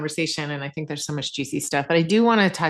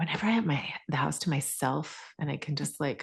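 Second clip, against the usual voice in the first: hushed whisper, quieter; 8 dB quieter than usual. Describing having the house to oneself: whispering. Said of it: "You're whispering".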